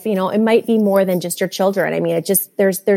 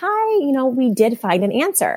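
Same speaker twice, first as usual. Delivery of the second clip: high, very cheery voice. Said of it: "she just was very cheery".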